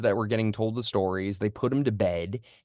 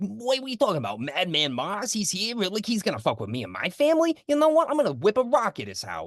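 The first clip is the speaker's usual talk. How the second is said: put-on Long Island Italian accent, very high; 11 semitones higher than usual. Retelling a movie scene, imitating a Long Island Italian kid: Long Island Italian accent. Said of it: "Long Island Italian kid".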